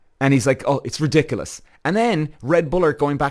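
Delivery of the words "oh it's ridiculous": acted sarcastic driver impression. Retelling what Max Verstappen said on the radio: imitating Max Verstappen being sarcastic. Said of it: "he's being sarcastic about it now".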